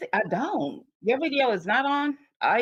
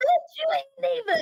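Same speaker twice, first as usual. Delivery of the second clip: shrill, very high yelling. Retelling yelling at the TV about a baby: retelling own yell at the TV. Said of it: "I was yelling at the T V like".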